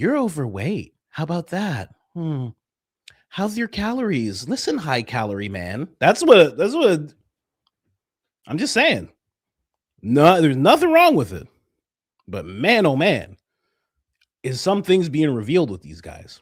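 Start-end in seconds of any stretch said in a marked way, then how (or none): 0.0-5.9 put-on flamboyant voice, appraising tone. Mocking how a zesty guy would insult someone: imitating a zesty guy. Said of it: "A zesty guy would look you up and down and be like".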